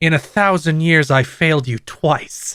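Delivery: mock contemptuous delivery. Retelling a game voice actor's line: imitating a contemptuous line. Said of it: "expresses more contempt than I have ever heard".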